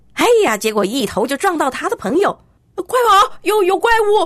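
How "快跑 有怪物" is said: very high, frantic yelling. Fleeing a cave, a character warns his friend, shouting while running. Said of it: "哈林边跑边叫".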